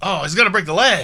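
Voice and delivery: loud, high, bloodthirsty ringside commentator yell. Retelling how Tony Schiavone reacted when Kenny put the chair over Nakazawa's leg, imitating Tony Schiavone yelling out. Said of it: "My man Tony Schiavone yells out".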